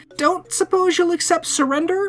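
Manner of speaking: small, high, meek, non-threatening pleading voice. Narrator facing the end of a crossbow bolt, in their least threatening voice. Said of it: "in my least threatening voice".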